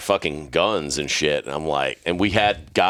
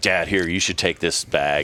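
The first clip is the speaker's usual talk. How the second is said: put-on panicky, freaking-out voice. Retelling a son handing over a bag at customs: imitating someone freaking out. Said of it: "almost, like, freaking out".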